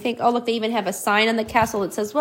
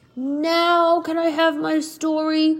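very slow, high, pleading, with "now" stretched out; 5 semitones higher than usual. Narrator reading a dragon's line to another character, begging. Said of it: "Begged the dragon on his knees".

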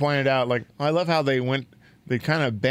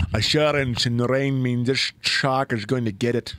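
actor voice sliding toward a Scottish accent. Doing a quick actor impression for the others: Patrick Stewart impression that came out kinda Scottish. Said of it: "That was kinda Scottish".

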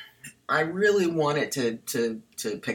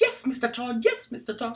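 very high, put-on London Cockney voice; 10 semitones higher than usual. Joking about a character's Cockney accent like Sweeney Todd: Helena Bonham Carter impression. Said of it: "doing a Helena Bonham Carter impression".

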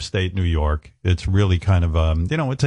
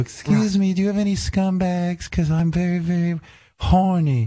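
very high, girlish put-on voice; 11 semitones higher than usual. Speaker retelling a kid prank on the druggist, girl voice. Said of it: "because I'd be doing a girl voice".

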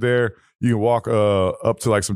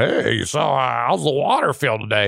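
put-on very drawn-out, overly friendly old man voice; 3 semitones higher than usual. Retelling how an old man approaches young women: imitating an overly friendly old man. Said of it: "some old dude ... trying to be way too friendly".

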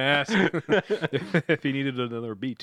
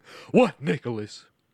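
angry tone; 3 dB louder than usual. Reading a character's line in a script read-through: angry. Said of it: "Barbara turns around angrily".

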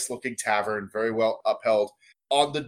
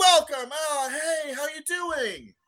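put-on very high-pitched, drunken, boozy voice. Game master voices the bar crowd greeting the players, drunken tavern crowd greeting. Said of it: "these people are super drunk".

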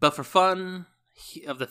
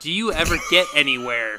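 mocking, with a laugh. He taunts the tortoise for being slow, with a mocking laugh. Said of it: "He said with a mocking laugh".

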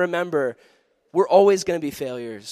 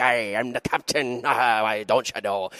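put-on stern, mean old Irish woman or sea captain voice; 7 semitones lower than usual. Retelling a field trip, imitating the ship's captain: Irish ship captain voice. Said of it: "this mean old Irish lady".

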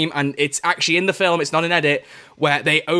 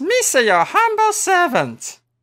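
very high, squeaky creature voice, pitch swinging wildly. Taking turns doing impressions with a co-host; Jar Jar Binks voice. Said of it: "Is this where I do my Jar Jar Binks?".

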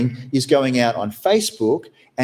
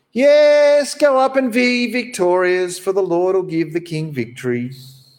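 cheeky, sarcastic yes, high-pitched and drawn out; 6 semitones higher than usual. Reading aloud a prophet's answer to the king: sarcastic reply. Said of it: "Micaiah replied sarcastically".

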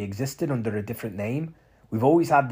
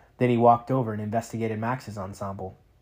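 ordinary delivery, nothing marked

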